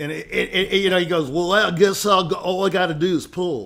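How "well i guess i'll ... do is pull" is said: put-on Texas country accent. Telling a joke about a country bumpkin after a lesson, Texas country accent. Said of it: "he had a country accent, you know, Texas".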